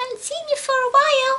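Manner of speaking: squeaky, very high-pitched little dog voice. Introducing the pet dog to viewers, speaking as Gizmo in a dog voice. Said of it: "(In dog voice)".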